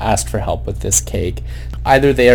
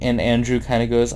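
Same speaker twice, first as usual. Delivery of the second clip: plain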